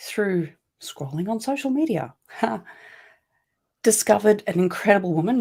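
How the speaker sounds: choked-up, catching voice breaking with emotion. Recounting the moment that changed their life, speaker is choking up. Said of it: "You can see I'm choking up".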